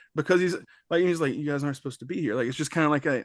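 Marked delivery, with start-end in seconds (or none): 1.4-2.4 mock aw-shucks tone, quieter. Retelling how a film character talks to ghosts: imitating an aw-shucks voice. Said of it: ""Oh, shucks" kind of voice that he gives".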